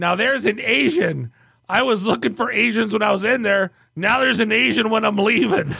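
put-on boozy, sleazy, drunk-sounding voice. Leaving the car with the valet, the speaker retells a stranger in a sleazy drunk voice. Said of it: "I hear a sleazy drunk voice, all caps".

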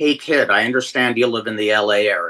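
put-on poker-faced, dead serious, low, dry deadpan. Retelling how John Tolos walked up in a parking lot: imitating John Tolos deadpan. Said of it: "with a straight face says".

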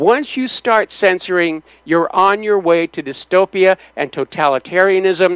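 normal talking voice

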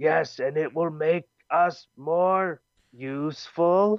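high-pitched, slow, dragged-out character voice. Retelling what a Dalek says in the story: imitating a Dalek. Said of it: "the Dalek is like".

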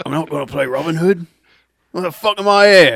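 put-on loud, high, shouted outburst in Cockney accent. Imitating an actor refusing a role: Cockney accent as Russell Crowe. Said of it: "that was Cockney".

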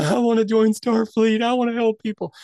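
mock crying through every word, high and sobbing. Recalling the end of an episode, acting out past self: retelling own sobbing. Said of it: "I was like sobbing".

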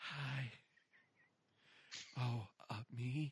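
hushed, out-of-breath voice. Mocking women on phone-line commercials, doing an out-of-breath quiet phone-line voice. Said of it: "always sounds like they just ran a bit. And they have to be quiet".

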